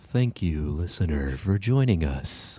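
public-radio host voice. Thanking the listener for joining, in a public radio voice. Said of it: "we need public radio voice for that".

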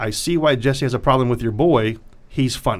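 normal talking voice

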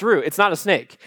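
ordinary delivery

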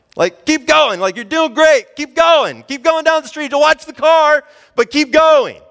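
high, loud, encouraging yell.

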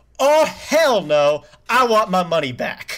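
high, drawn-out, livid, furious scream. Retelling how a row in the theater reacted: imitating people screaming. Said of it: "an entire row in my theater that screams".

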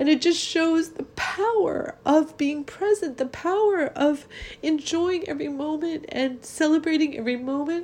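tearful. Speaker retells a story that makes them cry every time, crying. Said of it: "I'm crying".

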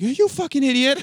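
put-on loud, high Boston accent. Imitating an actor slipping back into his accent: Mark Wahlberg Boston accent. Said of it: "then he would immediately drop it".

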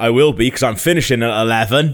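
mock big, loud voice. Retelling a man's answer to a greeting, imitating his big voice. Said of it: "he said it in this like big voice".

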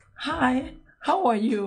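put-on high, slow American accent. Retelling how a woman at the track greeted the speaker, American accent. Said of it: "with the American accent going on".

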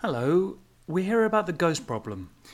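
very calming, soothing, reassuring voice. A ninja greets a frightened woman about her ghost problem, in his most calming voice. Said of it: "he said in his most calming voice".

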